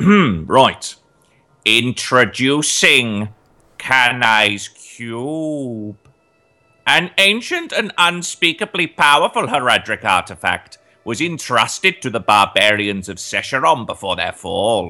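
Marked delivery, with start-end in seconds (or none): 1.7-14.9 most menacing, creepy, sinister, drawn-out villain voice. Asked for the creepiest Diablo-esque voice, introducing a game item in creepy Diablo-esque voice. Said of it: "your most creepy Diablo-esque voice that you can pull off".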